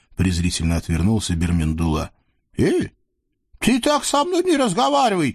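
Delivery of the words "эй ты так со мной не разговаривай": very high, injured tone of offence. Narrator voicing the sultan replying to Birmindula, offended. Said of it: "обиделся султан".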